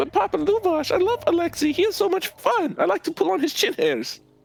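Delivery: put-on very high-pitched child character voice. Voicing Annabelle asking her father about Alexei: child character voice. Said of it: "And she's like".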